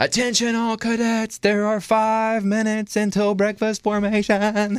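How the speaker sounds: mock terrified, very high, full-lung unison yell. Describing freshman cadets announcing breakfast in unison, retelling their scared yelling. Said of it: "they start yelling at the top of their lungs in unison".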